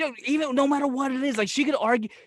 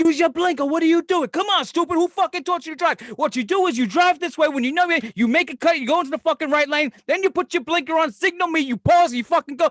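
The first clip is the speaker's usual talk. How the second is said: pitched-up, angry, yelled rant; 5 semitones higher than usual. Retelling how she yells at other drivers while driving, retelling a yell. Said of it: "Why are you yelling at me?".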